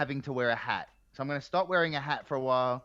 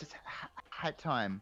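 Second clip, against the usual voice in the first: put-on nervous voice, quieter; 9 dB quieter than usual. Retelling how a friend hesitantly brought up bad news backstage: imitating a nervous friend. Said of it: "real nervous".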